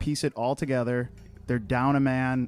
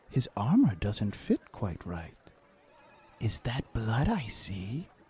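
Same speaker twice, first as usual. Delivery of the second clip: half-whispered, sidelong stage whisper, gossipy tone; 3 semitones lower, 4 dB quieter than usual. Voicing a character who half-whispers to other soldiers in line: half-whispering in character. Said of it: "she's whispering to the other soldiers".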